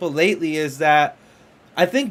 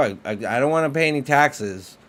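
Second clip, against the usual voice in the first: usual speaking voice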